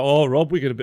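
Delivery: put-on Brummie accent. Imitating a friend building the tables, quoting him: put-on Brummie accent. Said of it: "he's a beautiful Brummie with an amazing accent".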